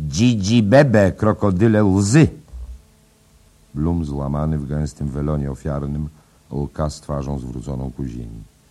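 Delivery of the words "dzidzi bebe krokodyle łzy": sneering, scornful, raised, mocking, taunting jeer. A character addresses a distraught man, sneering.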